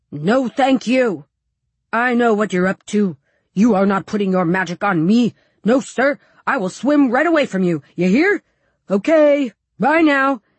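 loud, stern fishy character voice. Narrator reads a boy speaking for the fish he picked up, in a stern, fishy voice. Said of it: "he talks in a stern, fishy voice".

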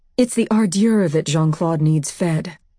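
ordinary delivery, nothing marked

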